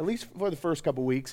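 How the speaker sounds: ordinary delivery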